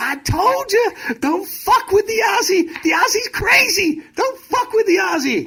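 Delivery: very high, loud, really squeaky voice. Telling a game story, quoting the assistant coach: imitating Mike Schuller's squeaky voice. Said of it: "he had this really squeaky voice".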